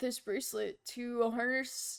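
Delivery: plain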